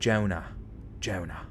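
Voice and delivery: put-on Australian accent. Asked whether they can do an australian accent, trying one: australian accent. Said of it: "Can you do an Australian accent?".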